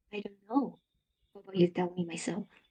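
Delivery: very soft, hushed, motherly voice. Speaker asked by the other speaker to demonstrate the voice, mommy voice. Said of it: "it does sound like mommy".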